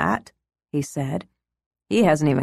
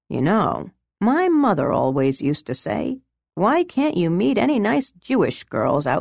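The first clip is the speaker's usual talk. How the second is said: lighthearted, playful, light tone; 4 semitones higher than usual. A man speaking to a woman, his tone turning playful. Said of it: "His tone became playful".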